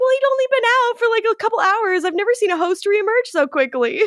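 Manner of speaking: very high, fast, flustered, rattled-off speech. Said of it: "And she was like".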